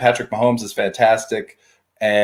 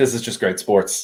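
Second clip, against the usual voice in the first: plain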